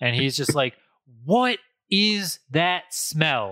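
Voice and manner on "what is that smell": furious, dragged out very slowly. Retelling a dad coming home to a strange smell: imitating an angry dad. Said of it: "As angry as you could possibly be".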